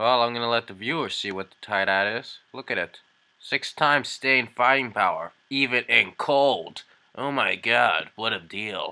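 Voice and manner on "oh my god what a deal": put-on TV commercial announcer delivery. Showing viewers a Tide ad, reacting to it: put-on announcer voice. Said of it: "That's my announcer voice".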